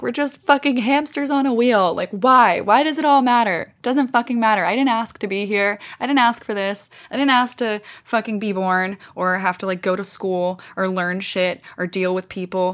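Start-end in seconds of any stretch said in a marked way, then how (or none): 0.0-6.9 mock, high-pitched sobbing and screaming meltdown. Recalling a full meltdown one college morning, re-enacting crying and screaming. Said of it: "I'm crying, I'm screaming, I'm like".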